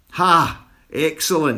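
high, gleeful, delighted whooping cheer. [name], enjoying himself thoroughly, shouts to the room. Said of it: "shouted [name], enjoying himself thoroughly".

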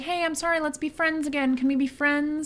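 friendly, high, bright voice. Retelling a movie scene where the mom knocks on the door: imitating a friendly tone. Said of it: "she's all friendly".

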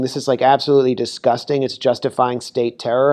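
normal talking voice

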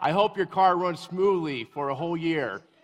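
very loud, high, friendly scream. Retelling what gets screamed at mean coworkers: retelling a loud shout. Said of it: "I usually say something positive in a loud voice".

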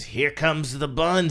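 sleazy, suggestive, leering lecherous delivery. Describing a scene where a man eyes a lady, imitating his lecherous delivery. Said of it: "he says it kind of lecherously like that".

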